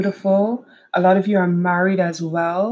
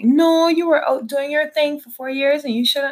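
wrong-sounding put-on motherly voice, pitched up; 8 semitones higher than usual. Retelling what mom said to reassure: put-on voice imitating mom. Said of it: "Why am I doing that voice to my mom?".

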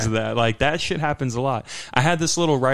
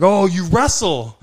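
high, loud, all-excited eager cry, acted out; 6 semitones higher, 5 dB louder than usual. Retelling an old veteran at Sprouts hearing the speaker wrestles, imitating someone all excited. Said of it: "And he was all excited".

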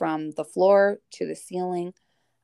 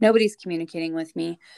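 ordinary delivery

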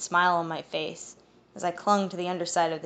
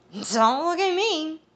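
put-on very high, sloppy, slurred drunk voice; 10 semitones higher, 4 dB louder than usual. Reading the story, a drunk character answers when blamed, in drunk slurred words. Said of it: "Alfred's slurred words".

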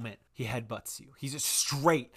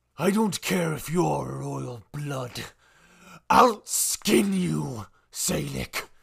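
ferocious, loud, rough menace, words stretched and spat; 6 dB louder than usual. In a role-playing game, a foe leans close after a knockdown, ferocious drawn-out words. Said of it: "spitting on you the way that he's ferociously drawing out his words".

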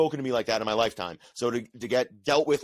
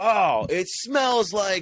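put-on scream, pitched higher; 8 semitones higher, 4 dB louder than usual. Retelling coming out of the curtain to the crowd: imitating own past scream. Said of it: "I came out of the curtain and I screamed".

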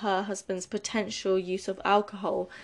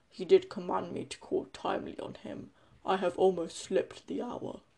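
put-on deep voice, quieter; 7 dB quieter than usual. Reading Macbeth aloud, the speaker voices Macduff in a deep voice. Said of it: "I'm going to do a deep voice for Macduff".

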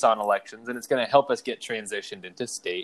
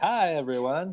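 pitched-up, put-on cartoon doctor voice; 5 semitones higher, 3 dB quieter than usual. Imitating the terrible cartoon doctor greeting everyone: imitating Doctor Nick from The Simpsons. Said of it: "Doctor Nick is like".

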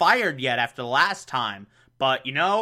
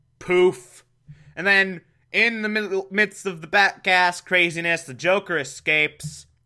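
usual speaking voice

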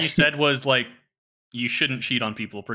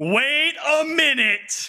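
sudden, very high, shrieking scream; 13 semitones higher than usual. Describing their reaction on the podcast to a hypocrite, retelling a scream. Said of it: "I'll just start screaming".

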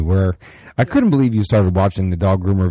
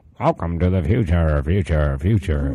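voice mimicking an audio echo effect; 3 semitones lower, 4 dB quieter than usual. Describing a sound-system glitch after plugging in, imitating an audio echo. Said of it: "echo kinda thing".

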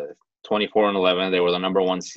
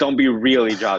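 put-on yelling, higher pitch; 4 semitones higher, 4 dB louder than usual. Retelling what the team yelled at new players who ran too fast: imitating yelling at teammates. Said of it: "we would yell at them".

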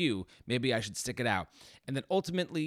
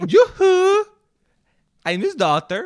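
put-on shrill, very high, very loud Swedish accent; 16 dB louder than usual. Repeating the co-host's line back to her, copying her accent; mock Swedish accent. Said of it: "you did it with this accent".

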